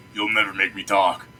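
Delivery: gruff, roughened character voice. Voicing an imagined reply to a player's question in the game, gruff voice. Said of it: "you hear in a gruff voice going".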